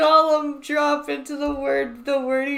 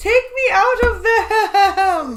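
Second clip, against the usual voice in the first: high, slow, fake sobbing that sounds like laughter; 6 semitones higher, 4 dB louder than usual. Mocking a woman's crying that sounds like laughing: imitating laugh-like fake crying. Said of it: "like she's laughing".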